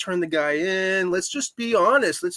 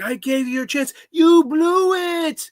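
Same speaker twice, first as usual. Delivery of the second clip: mock yell, very high and pitched up; 9 semitones higher, 5 dB louder than usual. Describing a film scene where De Niro yells at Stallone, retelling De Niro yelling. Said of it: "he's like yelling at Stallone".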